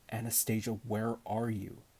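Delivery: ordinary delivery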